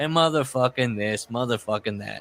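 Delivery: aggravated, upset cursing rant. Retelling the wrestler's quoted complaint again: imitating an upset Greg Valentine. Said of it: "he's really upset".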